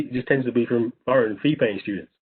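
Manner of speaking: plain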